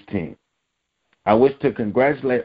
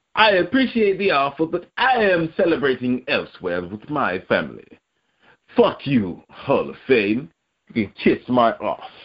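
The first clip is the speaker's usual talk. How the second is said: high-pitched mock English accent. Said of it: "in an English accent".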